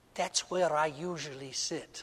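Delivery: put-on sweet Irish accent. Quoting a woman who stopped and stood beside two people, in a sweet Irish brogue. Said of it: "in this sweet Irish brogue".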